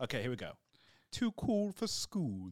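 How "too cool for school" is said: put-on vampire accent. Reading a line aloud in a put-on accent, sounding like Count Dracula. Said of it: "Sound like Count Dracula".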